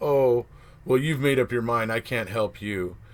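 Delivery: ordinary delivery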